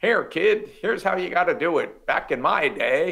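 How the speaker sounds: put-on old-timer California gold prospector accent. Playing the old guy telling a kid how to do it: old california prospector gold miner accent. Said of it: "California prospector gold miner accent".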